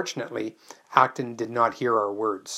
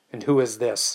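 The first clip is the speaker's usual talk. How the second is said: snapping, snappish. A man, turned angry, asks the narrator about a visitor, snapped. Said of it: "he snapped".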